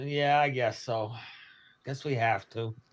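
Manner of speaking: disappointed, let-down tone. Agreeing to shoot the ship when asked: sounding disappointed. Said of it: "You sound so disappointed in it".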